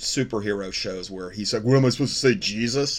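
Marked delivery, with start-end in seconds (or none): 1.6-3.0 heavy, mocking, really sarcastic tone. Quoting a superhero show character's line to the other speaker: mock-sarcastic quote. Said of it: "in like that really sarcastic tone".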